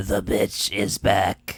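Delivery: drawn-out, very slow smoker's voice. Quoting a movie ghost's line, imitating a smoker's voice. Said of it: "Trying to go, do the voice really well".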